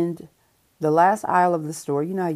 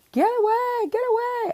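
put-on very high little-kid screaming. Retelling how the boy yelled after eye contact: imitating a child screaming. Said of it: "He starts screaming".

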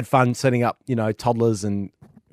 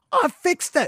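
very high, called-out shout. Recounting how the non-gamer called out to someone, retelling a yell. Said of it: "she yells at Luca".

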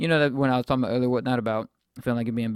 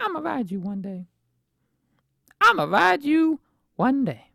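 very high, childlike put-on little-kid voice. Remembering watching planes fly overhead as a kid, imitating your little-kid self. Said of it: "I don't know why I did my voice like that".

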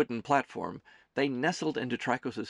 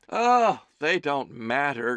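breezy, fluttering, loud, slow and dismissive; 6 dB louder than usual. A woman waves off a man's complaint about onlooking passengers; fluttery and dismissive. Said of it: "she fluttered dismissively".

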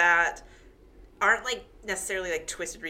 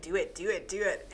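normal talking voice

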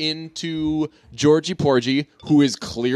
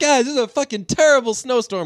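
really happy, upbeat, high and delighted voice; 9 semitones higher than usual. Retelling her announcing a terrible snowstorm: imitating a happy smiling delivery. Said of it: "she was really smiling".

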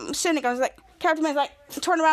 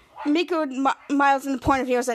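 ordinary delivery

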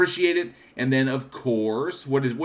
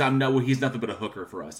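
plain

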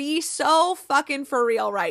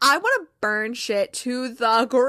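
ordinary talk, nothing marked

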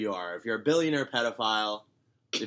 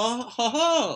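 high-pitched, loud put-on cartoon mouse laugh. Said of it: "this is my Mickey Mouse impression".

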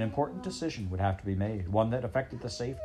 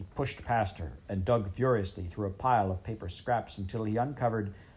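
ordinary delivery, nothing marked

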